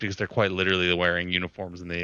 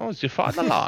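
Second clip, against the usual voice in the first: put-on German accent, very high-pitched; 12 semitones higher than usual. Discussing a war film, a speaker mimics wartime propaganda in a put-on german accent. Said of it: "Good German accent there".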